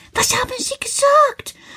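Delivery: very high, almost quivering with excitement. A man answers, hearing someone talked with the children, very excited, voice almost trembling. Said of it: "sagt er ganz aufgeregt, und seine Stimme zittert fast".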